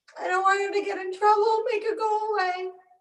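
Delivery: put-on high, sobbing crying child voice. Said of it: "and he starts crying".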